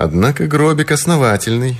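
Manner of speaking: smirk in the voice. One of two grave robbers at the coffin remarks: with a smirk. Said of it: "с усмешкой сказал один из них".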